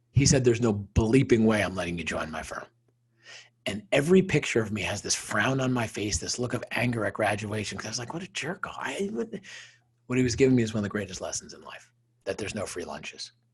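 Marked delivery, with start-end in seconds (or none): 0.4-2.6 put-on heavy, thick, laid-on Bronx accent. Retelling his father's answer to his wish to join the firm: thick Bronx accent. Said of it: "in my father's thick Bronx accent".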